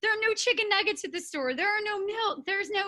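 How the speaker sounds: high, tearful, play-acted crying. Recounting calling her mom during overwhelming anxiety, retelling crying in tears. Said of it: "I call my mom and I am just like in tears".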